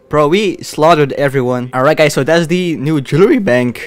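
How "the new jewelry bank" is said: voice cracking partway through the line. Playing a game and addressing viewers, voice cracking. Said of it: "my voice cracked".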